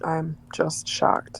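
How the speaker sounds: quiet, drawn sarcastic tone. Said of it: "This is sarcasm".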